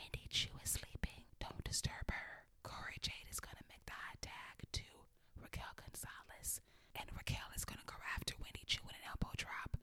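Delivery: hushed, whispered play-by-play announcer commentary. Recapping a wrestling match, the speaker quotes the announcers, retelling their hushed whisper. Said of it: "And I'm going to stop whispering".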